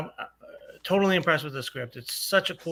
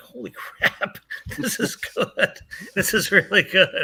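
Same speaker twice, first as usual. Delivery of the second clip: shocked, impressed, caught-off-guard exclamation; 4 semitones higher, 4 dB louder than usual. Retelling a first read of the script: retelling being shocked. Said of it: "You sound shocked".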